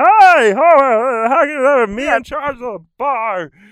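back-of-throat voice, very high, loud, drawn-out "how". Explaining voice placement to the other speaker, demonstrating a Barney from The Simpsons voice. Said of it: "it's like all back here in the back of like in the back of the throat".

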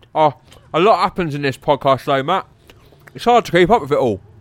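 talking with mouth full. On a comedy podcast, a co-host eating chocolate keeps talking with mouth full. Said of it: "Are you eating?".

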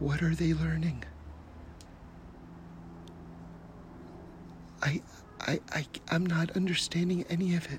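quiet, sincere, pressing, urgent, hushed whisper. Retelling a girl's question asked from a balcony: imitating a quiet urgent whisper. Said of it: "almost with an urgency in her voice, a quiet urgency".

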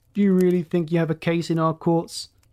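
usual speaking voice

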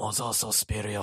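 female voice doing low, slow mock old man voice.

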